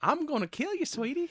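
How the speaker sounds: put-on very high, bright, sugary, peppy Southern accent. Describing a vicious cartoon character by mimicking her, peppy sweet southern accent. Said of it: "the peppy, like sweet Southern accent".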